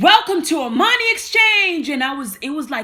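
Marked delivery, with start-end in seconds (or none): 0.0-1.9 extremely loud, powerful, high booming voice. Retelling how they welcomed everyone in the mall to armani exchange, extremely loud voice. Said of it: "I was doing it like in an extremely loud voice".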